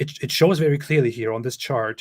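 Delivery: plain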